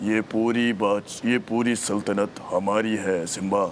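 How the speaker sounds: deep heavy put-on voice. Showing he can also do a heavy voice, a deep heavy voice. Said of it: "भारी voice तो मैं भी निकाल सकता हूँ।".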